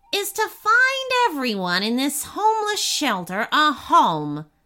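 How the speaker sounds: smug, gleeful, self-satisfied little imp voice. A narrator reads the imp giving the boy his third task, smug imp voice. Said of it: "The boy looked down to see a tiny blue imp rubbing his hands together. / The boy looked down to see a tiny blue imp rubbing his hands together. / chuckled the imp. / Unless you can complete my three t".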